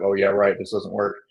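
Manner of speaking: ordinary talk, nothing marked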